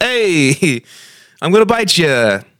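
put-on old Italian man voice. Joking that vampires turn into old Italian men, doing an old Italian man impression. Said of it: "Do you like that impression?".

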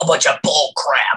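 raspy, wrestler-style promo voice. Imitating a wrestler's line after talking about his voice: raspy Sami Callihan voice. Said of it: "And that raspy ass".

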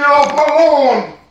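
play-acted, very high, very slow, shrill stretched yell. Joking that another speaker screamed at the kids: mock screaming. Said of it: "he just screamed at the kids".

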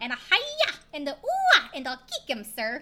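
loud, swooping, big cartoon sidekick voice. Speaker making a quick Anastasia reference: Bartok the bat voice. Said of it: "make a reference to Anastasia really quick with the little um Bartok the bat".

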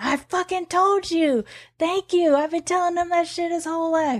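mock, very high, thrilled screaming outburst. Retelling jumping up after being proved right, reenacting an excited scream. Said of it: "excitedly jumped up and started screaming".

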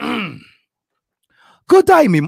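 bad put-on British accent, loud and high. Showing off his accent to a listener right after announcing it, put-on british accent. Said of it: "I have an awesome British accent".

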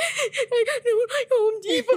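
sobbing, very high and very slow. Retelling being made to drive to Home Depot: imitating own past crying. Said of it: "And I would be, like, crying".

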